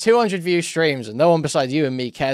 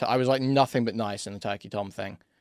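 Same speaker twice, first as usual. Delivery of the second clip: usual speaking voice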